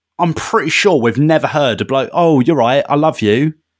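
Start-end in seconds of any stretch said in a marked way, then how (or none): 2.1-3.5 imitated southern English accent. Mimicking a Mon Calamari character from the live action: put-on East Sussex accent. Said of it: "my man sounds like he's from, you know, East Sussex".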